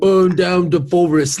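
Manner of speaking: slow, loud, dopey Cockney drawl. Correcting another's version of the actor's line: Michael Caine impression. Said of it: "his is more of like a".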